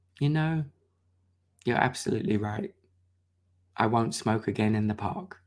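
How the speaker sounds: very quiet, soft-spoken, low-key, understated. Retelling what a person said on a walk: imitating someone speaking very quietly. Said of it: "Walt just very quietly said".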